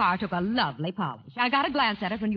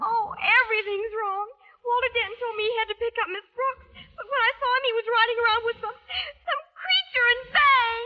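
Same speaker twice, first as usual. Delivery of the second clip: teary, close-to-tears voice. A daughter answers her mother, who sees she's been crying; tearful. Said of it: "you've been crying".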